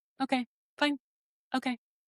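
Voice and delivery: play-acted flat, blank, feelingless tone, slightly high. Retelling a father's memory of a childhood reaction: imitating own emotionless reply. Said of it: "You were totally emotionless".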